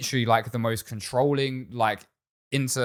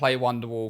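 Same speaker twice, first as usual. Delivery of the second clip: plain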